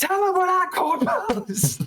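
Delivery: shrill, very high-pitched yelling. Ivy, standing next to you after you've repeated yourself, cuts in: Ivy yelling. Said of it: "like yelling at it".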